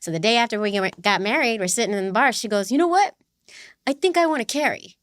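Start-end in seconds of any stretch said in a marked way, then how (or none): 2.7-4.8 put-on New York Queens accent. Retelling what their spouse said in a bar after the wedding, strong Queens accent imitation. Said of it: "she has such a strong New Queens accent".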